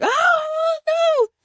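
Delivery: very high, panicked dog voice crying. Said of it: "the dogs are like".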